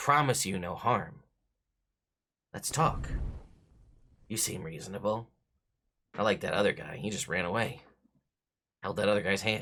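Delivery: persuasive, tempting, wheedling, coaxing tone. A one-eyed cave creature, once a wizard, calls someone back, coaxing. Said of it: "you see like open one singular lidded green eyeball kind of glowing from the dark. / I know all this because I used to be a wizard. Really? Yeah. I got greedy though. And now I'm this. / It's all ment".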